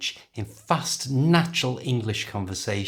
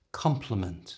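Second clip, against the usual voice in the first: compliment with com- slightly stronger; 2 semitones lower, 5 dB quieter than usual. Teaching compliment versus complement, first-syllable stress on compliment. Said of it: "is slightly stronger at the beginning".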